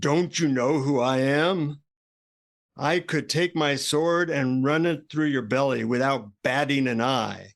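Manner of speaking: menacing, threatening, boastful tone. Telling a story, the guy confronts a seated monk, mock-threatening voice. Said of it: "in a in a threatening voice".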